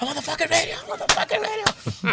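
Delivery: mock, very high, yelping cry. Retelling getting out of the car at night: imitating himself screaming. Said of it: "I started fucking screaming".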